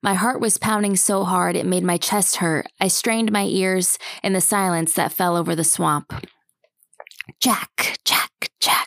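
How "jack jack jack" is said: sibilant, eerie, ghostly hissing voice. Reading a story: a voice in the swamp calls Jack's name, in a hissing voice. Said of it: "the voice hissed".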